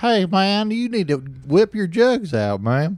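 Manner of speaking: very high, loud, drawn-out put-on Southern twang. Acting out what a Southern guy might say: imitating a Southern guy. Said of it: "what if a Southern guy was here right now and was like".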